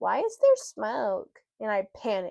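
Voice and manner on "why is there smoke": put-on small, curious little kid's voice. Retelling a story, voicing an unseen kid's question in a small child's voice. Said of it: "I hear a small voice ask".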